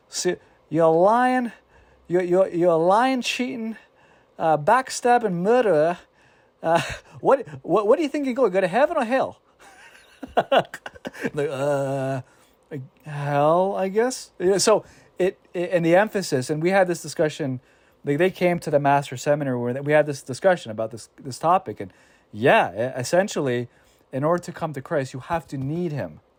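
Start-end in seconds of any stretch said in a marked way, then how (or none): 0.1-9.3 put-on thick Australian accent. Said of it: "a thick Australian accent".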